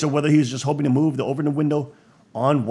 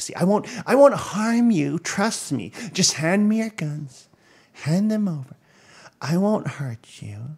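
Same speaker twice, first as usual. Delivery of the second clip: fake-nice, sweet voice with a lisp; 4 semitones higher than usual. Acting out someone who seems harmless and speaks with a lisp, mock-nice voice with a lisp. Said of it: "I speak with a little lisp, and I'm really nice".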